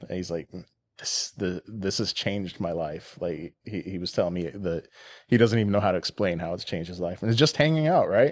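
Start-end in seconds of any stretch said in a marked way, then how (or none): 1.0-3.2 voice breaking, choked up, overcome with emotion. Retelling a veteran's reaction to a gift apron: imitating someone breaking down. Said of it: "And he broke down".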